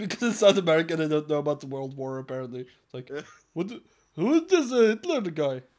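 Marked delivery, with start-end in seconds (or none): 3.5-5.6 clumsy put-on Indian accent, pitched up. Acting out someone in south america unaware of the war; bad indian accent. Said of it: "Why the fuck does he sound Indian?".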